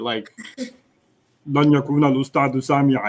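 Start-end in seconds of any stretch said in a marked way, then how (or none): 1.5-3.1 deep, slow, flat, unfeeling machine-like voice. Showing the listener how not to speak, in an Arnold Schwarzenegger in Terminator voice. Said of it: "like you know Arnold Schwarzenegger in Terminator".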